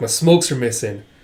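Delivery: normal talking voice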